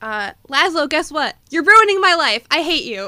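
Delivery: put-on very loud, high, shrieking teen scream. Recalling a line they love from the boy at Laszlo, imitating Colin Robinson screaming. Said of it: "he's screaming at Laszlo".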